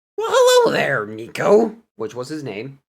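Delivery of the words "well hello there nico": high, swooping put-on character voice. Retelling the question he asked a cat before going shopping, in his best voice-acting way. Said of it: "in my best voice acting way I can".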